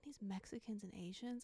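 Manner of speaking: put-on quiet aside. Retelling what a loud woman on the phone said next: imitating her saying it quietly. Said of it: "really quietly she goes".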